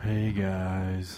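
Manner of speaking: depressed, creepy man's voice. Husband co-host greets listeners in the podcast intro, depressed creepy guy voice. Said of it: "Yours was like a depressed, creepy guy".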